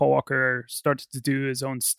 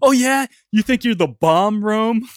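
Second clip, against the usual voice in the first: mock screaming outburst, loud and high-pitched; 8 semitones higher, 5 dB louder than usual. Retelling a film scene where a character yells: imitating Carter Verone screaming. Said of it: "he just screams at Tyrese".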